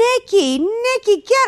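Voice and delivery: high voice calling out from a distance. Retelling a mom calling from the background: imitating her mom calling out. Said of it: "her mom's in the background going".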